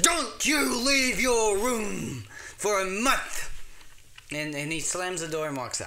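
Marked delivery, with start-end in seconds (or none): 0.0-3.5 livid, furious bellow, loud and high-pitched. In a story, Johnny's father reopens the door to yell at him: furious bellowing. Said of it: "And his father, ever angry, just bellows".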